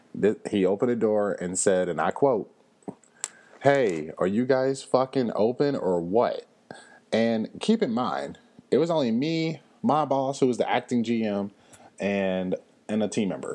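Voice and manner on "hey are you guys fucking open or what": put-on brash hollering, called out across the room. Retelling a customer opening the door and asking if open: imitating someone hollering. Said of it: "Who is this guy hollering at?".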